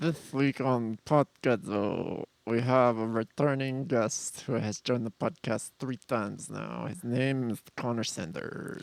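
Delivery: speaking through clenched teeth. Doing the podcast intro as a bit, talking with teeth touching. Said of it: "I don't want to introduce Connor with my teeth touching".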